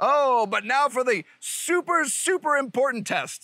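sarcastic, high, put-on fake enthusiasm. Introducing the next optic test: sarcastic mock excitement. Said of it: "that's sarcasm".

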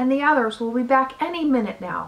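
ordinary delivery

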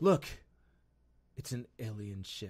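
put-on low, flat, emotionless, wooden delivery. Retelling a military character's movie line, imitating a flat, emotionless delivery. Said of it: "I did it with as much emotion as he did".

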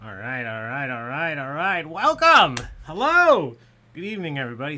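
very loud yell, rising and swooping in pitch. A trivia night host greets the audience at the start of the evening, yelling. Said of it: "Sorry for yelling".

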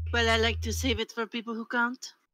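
put-on French accent from France. A character answers a customer's remark about their service, in a french accent. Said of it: "just like, ... Can I get a read on the accent? Is it like French from France? French? Yes".

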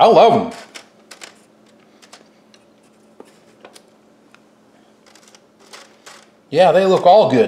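talking while chewing, mouth full of food. Tasting the crunchy batch just made, talking while chewing. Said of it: "Pretty rude of me talking to you and chewing".

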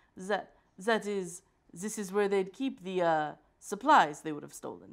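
put-on French accent. Voicing the character Chance as he looks around a room, in Chance's terrible French accent. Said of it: "Let me get my terrible French accent back".

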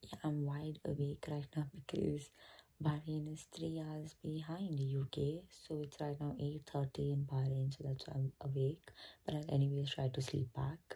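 hushed whisper. Vlogging at 5:30 a.m. while everyone else sleeps, whispering. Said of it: "To whisper because everyone is sleeping".

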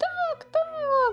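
delighted cry. The little bunnies at a party answer the call to open presents, joyful. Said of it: "зраділи було зайченята".

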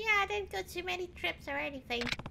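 put-on high, fast, squeaky annoying girl voice.

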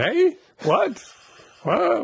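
very high, loud "what, what" with swooping pitch. Retelling how an elderly author kept mishearing questions in a loud room: imitating a hard-of-hearing elderly man. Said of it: "Like this".

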